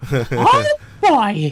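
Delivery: very high, loud, squeaky cartoon voice. Splitting cartoon roles with a partner, Mickey Mouse voice. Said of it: "I guess I'm the Mickey and you're Goofy".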